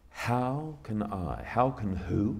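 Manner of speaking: put-on slow, drawn-out speaking. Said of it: "Just speak it slowly".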